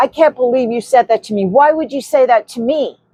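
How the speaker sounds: mad, worked-up, heated man's voice. Retelling what a man said after being told welcome to america, imitating an angry man. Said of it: "he was so mad at me".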